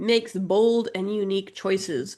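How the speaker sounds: plain reading voice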